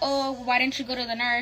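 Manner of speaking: mock tone full of attitude. Retelling what the front office lady asked, mimicking someone giving attitude. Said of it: "She's like giving me attitude already".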